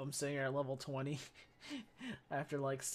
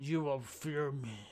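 slow, lumbering, monstrous storybook ogre voice. Playing with a voice changer, threatening as an ogre: ogre voice. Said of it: "or I could be an ogre".

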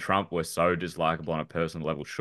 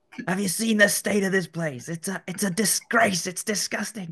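bad British accent, much higher in pitch. Imagining what Gordon Ramsay would tell everyone, in a bad Gordon Ramsay accent. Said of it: "That was an awful accent".

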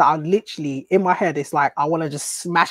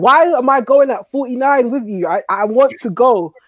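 play-acted fed-up exasperated rant, loud and high; 7 semitones higher, 5 dB louder than usual. Retelling getting stuck behind a slow driver: imitating own road rage. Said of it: "I'm mad. I'm like".

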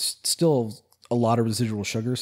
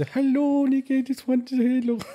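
put-on very high-pitched Dutch grandma voice; 13 semitones higher than usual. Quoting his grandmother's phone message to everybody, in a typical European grandma voice. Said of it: "that's the typical European grandma voice".

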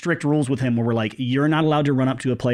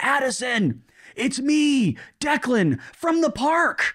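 stretched, very high, slow, drawn-out shout; 12 semitones higher than usual. Retelling a call to a player from behind the dugout: imitating someone yelling. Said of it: "he's yelling".

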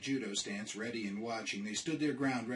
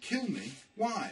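very high-pitched, alarmed, panicked disbelief; 10 semitones higher than usual. Narrator reads a character hearing that something wanted to kill him, panicked. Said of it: "Rory felt panic rising".

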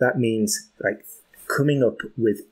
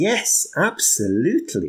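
enthusiastic rise through "yes, absolutely," swooping on "absolutely"; 4 semitones higher than usual. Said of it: "I went up to show some enthusiasm".

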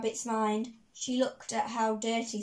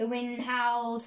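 plain reading voice

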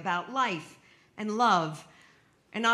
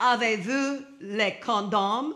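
badly done, terrible French accent. Retelling asking at a Paris pharmacy: terrible French accent. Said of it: "in my terrible French accent".

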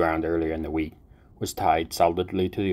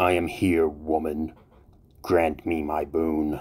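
slow, intoned, reverberating, echoing demonic voice. A summoned demon appears over the altar and answers the woman: Melkai's reverberating demonic voice. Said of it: "The air over the altar shimmered and slowly coalesced into a familiar demonic form. ... The demonic voice reverberated through the room".

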